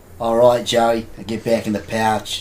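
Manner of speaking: loud, put-on Australian accent done as a bit. Giving an example of what you could say for Australia: put-on Australian accent. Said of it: "for Australia".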